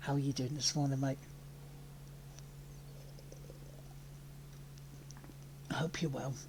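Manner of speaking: quiet, soft, deliberate whisper. At twenty past eight in the morning, greeting a mate while whispering. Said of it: "I am whispering, and it is deliberate".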